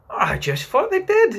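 very high-pitched, eager, excited voice. Reading a character breaking in on the storyteller, excitedly. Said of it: "Curly broke in excitedly".

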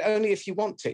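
high, put-upon, martyred victim voice. Retelling someone's reply when offered help, imitating a victim voice. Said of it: "Victim voice".

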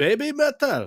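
French-accented speaker's mock Japanese accent. Speaker naming the band they'll react to, in a French guy's mock Japanese accent. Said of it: "I somehow sounded like a French guy impersonating a Japanese person".

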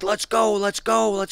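mock shrill scream, way up high. Retelling how a man holding a gun screamed at him: imitating someone screaming. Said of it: "he's screaming at me".

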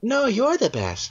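put-on high little kitty cat voice. Stuck slipping into a cat voice every time he says it, cat voice. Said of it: "fuck you, cat. Get out of my throat".

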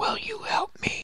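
soft, breathy, barely-there whisper. Playing back a recording for Becca, the speaker mimics what he hears: imitating a whispery voice. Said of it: "I hear like a whispery voice".

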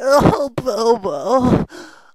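high, mock sobbing wail, fake crying.

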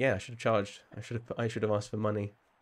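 ordinary delivery

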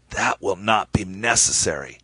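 raspy, rasping voice. An ambassador replies to the narrator, speaking in a raspy voice. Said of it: "shot me a disgusted look and said in a raspy voice".

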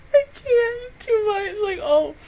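crying while talking. Reacting to an episode that makes the speaker cry: crying while talking. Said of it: "I'm crying".

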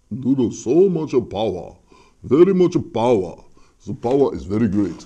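put-on anime character style voice. Hyping a powerful device's settings, in an anime character voice. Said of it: "You say it like an anime character".

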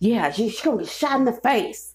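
put-on angry old man voice. Retelling what an older guy told him, imitating an angry old person. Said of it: "sound like an angry ass old person".

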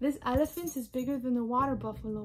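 ordinary delivery

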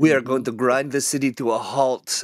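horrible fake French accent drifting into Russian. Riffing on foreign superheroes stealing crises: horrible french accent. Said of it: "that was a horrible French accent".

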